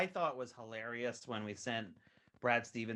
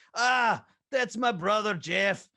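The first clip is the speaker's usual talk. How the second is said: put-on very high, loud Scottish accent; 10 semitones higher, 13 dB louder than usual. Showing which voices you do, talking about your brother Jeff, Scottish-sounding Stan Van Gundy impression. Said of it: "he's more Scottish".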